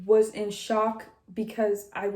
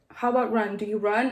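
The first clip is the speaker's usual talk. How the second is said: plain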